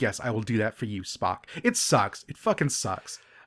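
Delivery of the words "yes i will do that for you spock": weepy, tearful, devoted, dutiful tone. Retelling a scene where Uhura tearfully nods: mock tearful Uhura. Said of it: "tearfully nods and is like".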